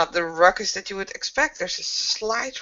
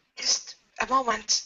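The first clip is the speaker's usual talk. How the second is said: hushed, half-whispered words; 3 semitones higher than usual. Narrator voicing a character standing at the front door, half-whispering. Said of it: "Kaylee whispers".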